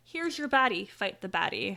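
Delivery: ordinary delivery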